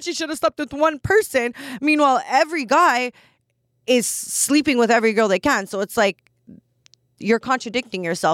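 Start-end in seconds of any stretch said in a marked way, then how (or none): 0.0-1.5 high, loud mock-shocked outrage, gasped out. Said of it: "They're like".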